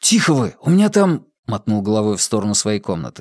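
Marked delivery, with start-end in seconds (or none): 0.0-1.3 fierce hissed whisper, higher pitch. The narrator rushes to meet his noisy parents arriving late: fierce hissed whisper. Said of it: "зашипел свирепым шепотом".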